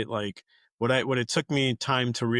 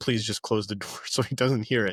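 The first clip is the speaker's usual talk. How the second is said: whispered, stage-whisper style. Retelling asking mom to close the door: imitating a whisper. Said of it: "I said that really whispered".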